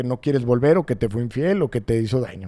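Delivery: ordinary talk, nothing marked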